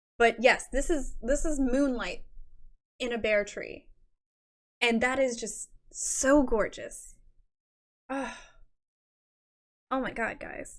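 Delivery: fighting back tears, voice straining against crying. Presenting a viewer's submission on a stream, holding back tears. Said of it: "I'm really trying not to cry".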